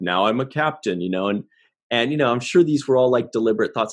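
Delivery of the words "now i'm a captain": lowered, slightly deeper voice. Showing how the actor spoke in later scenes: lowered voice imitating Nog. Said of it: "He made it a little lower".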